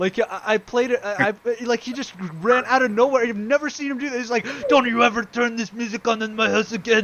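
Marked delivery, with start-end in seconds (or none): 4.7-7.1 put-on yelling in Moroccan accent. Retelling his dad bursting in over a record, imitating dad yelling, Moroccan accent. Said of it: "With his Moroccan accent going and just like yelling".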